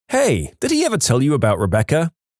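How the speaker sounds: ordinary delivery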